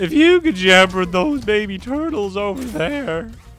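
mock cartoonish teenager voice. Imitating the old game's turtle line: Simpsons Spotty Teenager voice. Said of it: "Like the teenager in, is, uh, Spotty Teenager in Simpsons".

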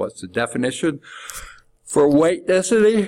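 words spoken through a yawn. Working a density problem aloud for a class, the speaker asks while yawning. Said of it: "Sorry, I've got the yawns".

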